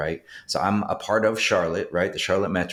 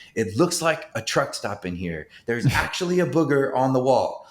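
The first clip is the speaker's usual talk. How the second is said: high-pitched yelling; 6 semitones higher than usual. Recalling yelling from the bathroom before company came over, retelling a scream. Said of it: "Like I'm screaming that".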